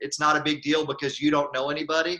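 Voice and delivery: ordinary delivery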